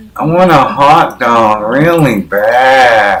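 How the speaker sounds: slow, loud drawl. Imitating a woman asking for a hot dog: Jennifer Coolidge impression. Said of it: "you can tell I'm doing Jennifer Coolidge".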